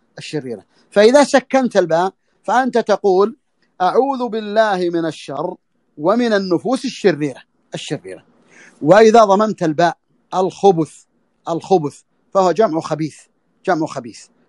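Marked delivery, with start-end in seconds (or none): none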